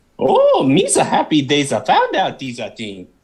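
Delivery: goofy alien voice with swinging, swooping pitch. Guest talks to the host in character before switching back, Jar Jar Binks voice. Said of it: "talk to me in your real voice".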